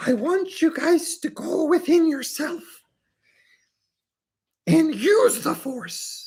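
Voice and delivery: very high, creature-like little voice. Opening a presentation to the audience, the presenter speaks in a Yoda voice. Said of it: "somewhat of a Yoda interpretation".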